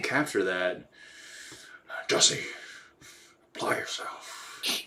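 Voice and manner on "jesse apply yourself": whispered, breathy voice.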